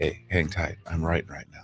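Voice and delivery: breathy, hushed whisper, very quiet. Retelling a phone call where the other person answered: imitating someone whispering. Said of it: "why are you whispering to me?".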